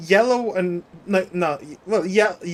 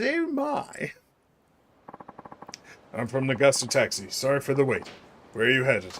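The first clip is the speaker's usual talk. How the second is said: soft, quiet, rapid, brisk sing-song nanny voice; 5 semitones lower, 6 dB quieter than usual. Playing a taxi driver greeting a passenger, in a Mary Poppins voice. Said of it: "bust out my Mary Poppins".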